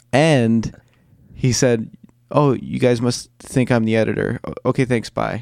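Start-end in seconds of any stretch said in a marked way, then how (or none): 2.4-5.5 put-on awkward speech. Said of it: "perfectly awkward with it".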